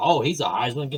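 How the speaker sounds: ordinary delivery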